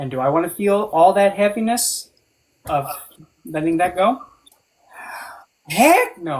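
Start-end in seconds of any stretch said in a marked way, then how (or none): 5.7-6.4 voice cracks, louder. A speaker answers their own question aloud, voice cracking. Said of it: "the voice crack".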